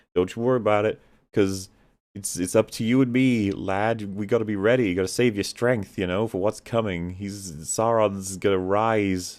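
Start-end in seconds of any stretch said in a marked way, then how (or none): none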